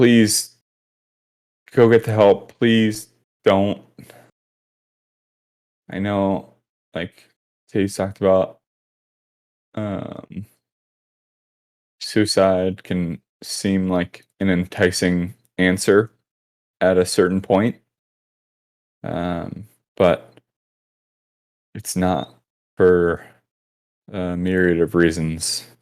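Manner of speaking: earnest, tearful voice, close to crying. Speaker addressing listeners who may be struggling, tearing up. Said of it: "I'm I'm tearing up now".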